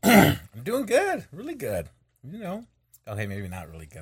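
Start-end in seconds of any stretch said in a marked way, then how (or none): 0.0-1.9 very high, very loud, swooping, shrill, over-the-top enthusiasm. Answering how the day is going: overly enthusiastic. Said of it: "I'm just being overly enthusiastic".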